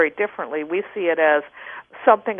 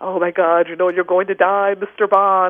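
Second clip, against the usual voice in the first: ominous, doom-laden fortune-teller or movie announcer delivery. Mocking how movie tarot readers speak when pulling the death card, mock-ominous movie voice. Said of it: "they speak very ominously".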